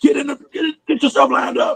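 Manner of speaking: screaming called out high but light. Recalling refs missing a call on a punt, reenacting yelling at his team: retelling his own screaming. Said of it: "I'm screaming like".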